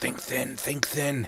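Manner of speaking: hushed half-whisper under the breath. Voicing a portly character squeezing through a narrow canyon: half-whispering to himself. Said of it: "you hear him whispering to himself".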